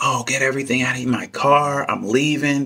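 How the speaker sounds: acted angry, jealous outburst. Retelling what she said, imitating someone mad and jealous. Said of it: "She gets all mad and jealous".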